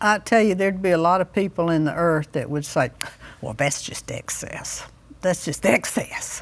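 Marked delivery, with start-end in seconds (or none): 3.4-6.4 put-on hushed, breathy, cranky old woman voice. Acting out what many people would say, in a put-on cranky old woman voice. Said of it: "your imitation of a cranky old woman".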